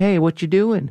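sweet, friendly fish voice. Retelling how a scuba diver imitates a friendly grouper: imitating a grouper fish. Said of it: "imitates him and goes".

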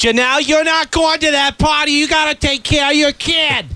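dead-on put-on older woman's voice. Doing an impression of the guest's mom scolding her: impression of Janelle's mom. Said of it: "[name] does a great impression of your mom".

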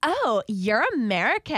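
exaggerated put-on American accent. Retelling how a British girl mocked the speaker's accent: mocking American accent. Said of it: "that's what she made me sound like".

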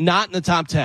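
ordinary delivery

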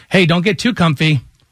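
ordinary talk

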